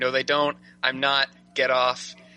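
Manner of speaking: put-on whispering. Recounting being held in a side headlock: retelling a whisper. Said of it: "I start whispering".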